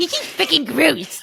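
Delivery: mocking put-on troll voice. Acting out viewers online reacting to an episode, in an internet troll voice. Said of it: "Hannah's troll voice is my favorite thing".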